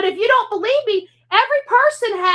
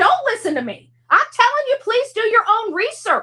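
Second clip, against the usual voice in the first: pressing, heated, emphatic, insistent voice; 3 semitones higher than usual. Telling viewers to call a lawyer themselves: yelling. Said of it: "can you stop yelling at us?".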